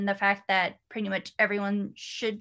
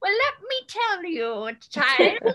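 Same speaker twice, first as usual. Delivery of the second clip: very high, swooping, put-on old grandma voice; 11 semitones higher, 4 dB louder than usual. Speaker imagines answering curious great-grandkids years from now, in a grandma voice. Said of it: "that was my best grandma voice".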